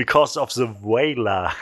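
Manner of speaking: heavy put-on American accent, possibly English. Joking about an english speaker saying a german word: put-on strong english or american accent. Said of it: "mit so einem starken englischen Ak-, oder amerikanischen Akzent".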